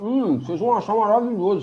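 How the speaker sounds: put-on high-pitched talking through a mouthful of food. Voice actor recalling dubbing a cook, imitating Jamie talking mouth-full. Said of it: "falando de boca cheia".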